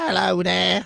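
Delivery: put-on little fellow's voice with English accent. Voicing a pet dog as he would sound: dog Doodle as a little English guy. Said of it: "It's a little English guy".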